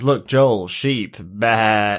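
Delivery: slow teasing, drawn-out bleated bah. Retelling a character's teasing line about sheep: imitating a mocking tone. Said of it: "mocking him".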